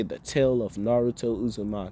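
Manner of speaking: ordinary delivery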